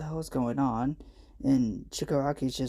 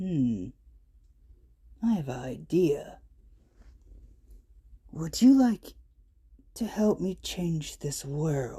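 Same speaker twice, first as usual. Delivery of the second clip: coaxing, persuasive, eager-to-win-over tone; 2 semitones higher than usual. Narrating a story where Shigaraki talks to the quirkless boy, Shigaraki's voice. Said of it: "How about you join my league? / and [name]'s just laughing".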